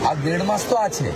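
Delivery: plain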